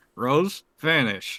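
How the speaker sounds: muttered out of the side of the mouth. Voicing a character who turns around quickly: muttered out of the side of the mouth. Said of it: "just out of the side of his mouth, just say".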